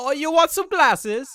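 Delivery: put-on Italian accent. Joking about someone pushing glasses on people in the street, in an Italian-sounding accent. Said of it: "that sounded like an Italian person".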